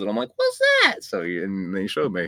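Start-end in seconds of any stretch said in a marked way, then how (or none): 0.2-1.0 exaggerated voice, pitched way too high. Retelling asking dad about a movie, exaggerated high-pitched voice. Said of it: "I didn't sound that high pitched. I don't know why I went overboard there".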